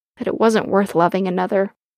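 plain reading voice

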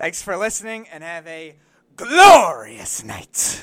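forceful delivery. Practicing a show sign-off after coaching to sound more surprised: emphatic delivery. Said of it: "You emphasize now, you put your gut into things".

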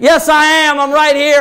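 high-pitched, loud hollering. Retelling how Santa Claus answered a kid in the crowd, retelling a yell back. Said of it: "Santa Claus yells back like".

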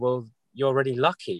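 mock words bubbling through laughter. Retelling a teacher's reply to a struggling mother: imitating someone laughing while talking. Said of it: "he just starts laughing and going".

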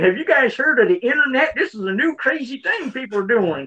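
mock clueless, out-of-touch announcing tone. Mocking own earlier phrasing as out of touch: mock-clueless retelling of own words. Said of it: "It's like I'm saying".

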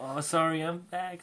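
put-on tearful, sobbing, high crying voice. Retelling a story, the speaker acts out the girl coming back, imitating her crying. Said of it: "all crying".

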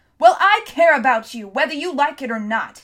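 screaming with full force, very loud. Heaving himself to his knees, a man answers his friend, screaming. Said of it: "Tom screamed".

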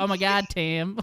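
twang laid on thick, exaggerated. Noting how Tim's voice changes, done in Tim's exaggerated twang. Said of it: "the twang in your voice starts coming out a little bit more. It's like".

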